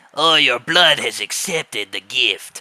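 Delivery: harmless, unthreatening menace with no bite at all. Discussing a big character who resembles Mister X, imitating an un-scary voice. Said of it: "it's hard to be scared of a guy when he's like".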